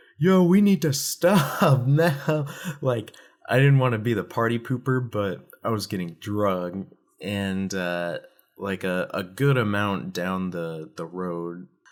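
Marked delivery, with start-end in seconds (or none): 0.2-2.5 very high, raised, drawn-out holler. Retelling being dragged behind a moving truck: imitating his own yell. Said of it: "I'm yelling".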